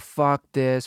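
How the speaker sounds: usual speaking voice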